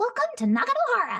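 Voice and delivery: very high-pitched, bright, giggly sing-song voice. Showing how a character speaks: high-pitched giggly Yoimiya voice. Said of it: "nasal as well".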